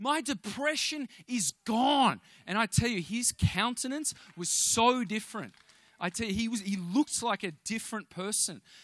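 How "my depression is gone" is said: acted, high, drawn-out yell. Retelling a man yelling in the bathroom: imitating someone yelling. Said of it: "And he's yelling in the bathroom".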